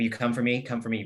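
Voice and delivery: fast, flat, level, unemotional, almost robotic monotone. Retelling what a woman said to a man in a story: imitating flat robotic tone. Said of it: "like almost robotic".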